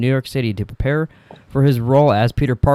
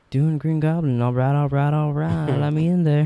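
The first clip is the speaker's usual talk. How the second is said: calm, laid-back, relaxed, unbothered voice; 2 semitones higher than usual. Imagining the casting of Green Goblin: Matthew McConaughey impression. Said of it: "Matthew McConaughey was like".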